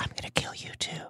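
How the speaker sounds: soft, low chilling whisper.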